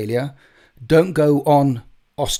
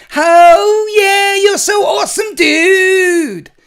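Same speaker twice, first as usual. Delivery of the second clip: very slow, very loud, very high Californian surfer accent; 8 dB louder than usual. Showing off American accents after a New Yorker one, now a Californian accent. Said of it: "That's my Californian".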